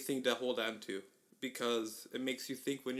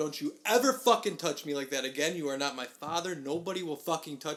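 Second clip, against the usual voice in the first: put-on furious anger, much louder; 3 semitones higher, 4 dB louder than usual. Retelling what he shouted after being grabbed, reenacting his angry outburst. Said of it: "And I lose my shit".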